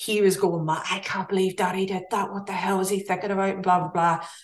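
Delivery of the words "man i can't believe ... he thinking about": put-on broad, strong Northern Irish Belfast accent. Retelling what the son said in the car, do Paul's strong Belfast accent. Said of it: "talking with his strong Belfast accent".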